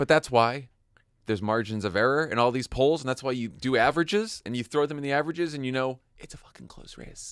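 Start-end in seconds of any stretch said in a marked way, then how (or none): 6.2-7.3 hushed, low, breathy whisper. Discussing poll averages and a close race, whispering like Joe Biden. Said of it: "I just whispered like Joe Biden".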